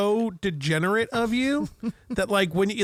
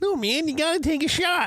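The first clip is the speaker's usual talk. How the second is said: topmost register, highest pitched-up friendly voice; 7 semitones higher than usual. Retelling being told to take a shot: high Poinsett voice. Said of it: "The highest Poinsett voice".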